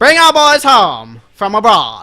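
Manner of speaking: put-on booming 1940s old-time radio announcer voice. Talking about war abroad like a forties radio announcer: 1940s radio announcer voice. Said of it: "You gotta talk like you're a radio announcer in the forties".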